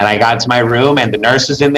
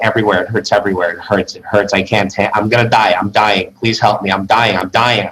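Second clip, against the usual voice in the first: acted-out desperate, frantic begging; 2 semitones lower than usual. Retelling lying there while the doctor checks them: retelling desperate begging. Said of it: "Like begging this doctor to save my life".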